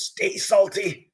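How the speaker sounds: mocking tone delivered through a cackle. Narrating a character taunting a player after an attack, cackling taunt. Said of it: "He just kind of cackles and goes".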